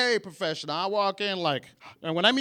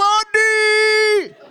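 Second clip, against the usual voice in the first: mock-thrilled, higher, louder fake excitement; 12 semitones higher, 9 dB louder than usual. Retelling how a waiter greeted the speaker, as if they were long-lost friends, imitating an overly excited greeting. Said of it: "Like he hasn't seen me in 10 years".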